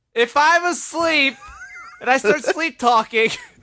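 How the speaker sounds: full, high-pitched screaming. Asking a question after being told to scream it: screaming. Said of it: "could you please scream your question?".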